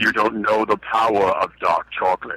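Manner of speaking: low villainous voice. Showing what a parent might say to a kid, in Darth Vader voice. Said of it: "in the Darth Vader voice".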